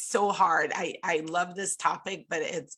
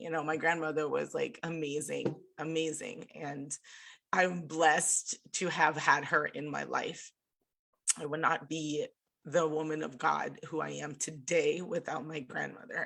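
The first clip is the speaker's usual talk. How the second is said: tearful, choked-up voice, on the verge of tears; 4 dB quieter than usual. A speaker remembers their grandmother, about to cry. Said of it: "I'm gonna cry".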